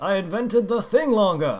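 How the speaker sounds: put-on old man voice. Quoting a line from a Futurama episode in Farnsworth voice. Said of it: "That's pretty much the best I'm gonna get with his voice".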